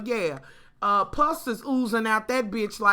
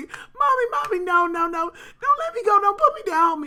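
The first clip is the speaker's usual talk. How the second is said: put-on very high, terrified small child pleading and begging; 11 semitones higher than usual. A mother retells her baby in a dirty toilet: imitating her scared child. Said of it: "She was so scared".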